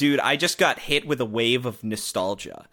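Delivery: ordinary delivery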